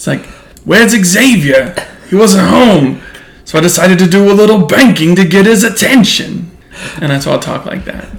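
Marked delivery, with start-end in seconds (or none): 0.6-6.5 loud, high-pitched, gravelly Brooklyn accent, belted out. Showing how their Juggernaut character talks, gravelly Brooklyn Juggernaut voice. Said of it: "it's sort of like a gravelly Brooklyn".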